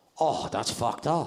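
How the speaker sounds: put-on old Korean man voice. Retelling a spa visit, imitating an old korean man. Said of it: "Some old Korean guy looks at me and goes like".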